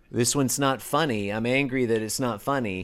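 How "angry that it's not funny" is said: normal talking voice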